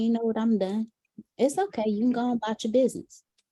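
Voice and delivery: mock calm, dismissive, fed-up tone. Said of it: "she just talks to you like this".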